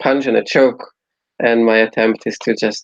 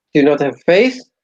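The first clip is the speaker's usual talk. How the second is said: challenging tone, called out loud; 4 semitones higher than usual. In a cathedral, a player character yells to two others, yelling. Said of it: "I yell to them both".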